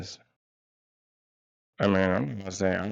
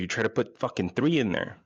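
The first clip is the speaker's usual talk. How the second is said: ordinary talk, nothing marked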